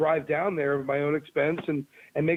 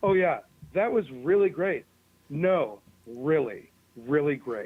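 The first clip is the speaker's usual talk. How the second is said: play-acted, insincere, sarcastic tone. Imitating how she might have praised the audition insincerely: imitating sarcastic praise. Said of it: "the L A sarcastic, sar-, sarcastic backwards day line".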